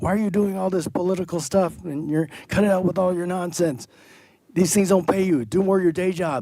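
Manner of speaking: high, nagging, scolding yell. Speaker retells how their immigrant father yells at them; imitating a father yelling. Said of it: "starts yelling at me and going".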